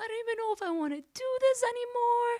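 put-on very high, loud, bawling crying wail. DJ retelling calling their sister one night: retelling bawling, crying. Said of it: "I called my sister bawling, crying, like".

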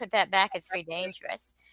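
ordinary talk

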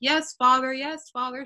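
mock indifferent, dismissive, going-through-the-motions tone. Imitating a daughter's reply to her father's demand: imitating dismissive "whatever" obedience. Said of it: "whatever, you know".

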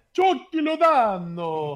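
put-on Spanish accent.

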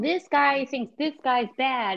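talking-down, spelled-out voice.

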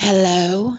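very loud, mock-seductive put-on sexy voice. Answering a phone call from a guest as a joke: put-on sexy voice. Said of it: "did my sexy voice impress you?".

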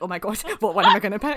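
very loud, put-on panic. Joking about choosing a food as if it mattered: mock panicking. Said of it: "I'm pure panicking".

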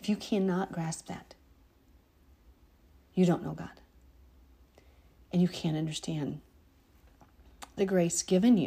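emotional, choked-up, catching voice that breaks. Addressing the listeners directly about grace, choking up. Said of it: "I choke up every time I think about this".

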